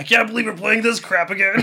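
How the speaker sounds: loud, high-pitched, grouchy complaining gripe. Retelling how the sock badmouthed music videos: Ed the Sock voice. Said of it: "he's like".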